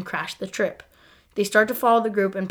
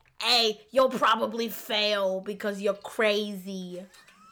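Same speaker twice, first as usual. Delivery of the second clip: put-on elderly smoker's voice; 4 dB quieter than usual. Discussing Monk, imagining what Sharona would have said: Sharona impression. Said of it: "like Sharona at 80 years old who's been smoking".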